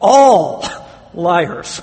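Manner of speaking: all punched loud with heavy stress. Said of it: "I want to emphasize that word".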